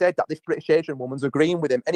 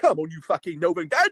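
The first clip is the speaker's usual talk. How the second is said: wobbly, wibbly put-on South London cockney accent. Showing what a stereotypical South London cockney is to him: mock wibbly wobbly cockney voice. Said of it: "A wibbly wobbly".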